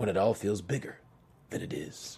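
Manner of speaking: soft, low, somber reading tone. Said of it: "I'm gonna say it in a very, um, somber tone".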